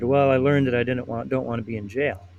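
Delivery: normal talking voice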